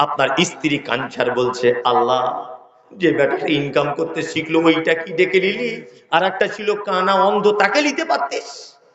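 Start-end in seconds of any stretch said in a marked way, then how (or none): none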